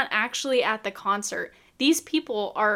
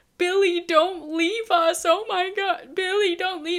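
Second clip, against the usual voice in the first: put-on crying plea, high, slow, with real tears; 7 semitones higher than usual. Retelling a girl in a movie theater crying at the credits: imitating a girl crying. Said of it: "crying, like, actual tears, crying, saying".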